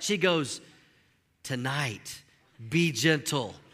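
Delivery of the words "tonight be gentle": hushed, soft, confiding, secretive half-whisper. Retelling what an aunt half-whispered at the wedding reception: imitating a half-whisper. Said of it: "she whispers something to me".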